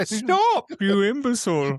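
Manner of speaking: very high, loud, swooping voice. Retelling a cartoon scene where the snake annoys him: Prince John impression. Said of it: "And he was like".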